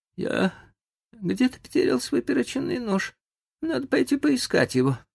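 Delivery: feeble, weak, faint, very high voice. Narrator reads a character rising from his seat to speak, in a weakened voice. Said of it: "сказал ослабевшим голосом".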